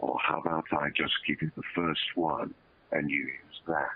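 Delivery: spoken very close on the mic. Retelling what an actor said when asked for three takes: Patrick Stewart voice. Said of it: "he says very close on the mic".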